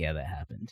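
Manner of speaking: dead-serious, barely audible low murmur. Retelling Chris's reply about punching a boulder: imitating Chris, all serious. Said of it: "but all serious".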